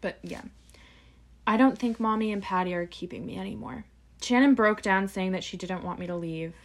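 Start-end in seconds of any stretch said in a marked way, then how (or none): none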